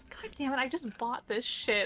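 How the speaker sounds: irritated character grumbling. Voicing Deirdre pulling out new armor, annoyed in character. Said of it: "Deirdre pulls out plus one armor and goes".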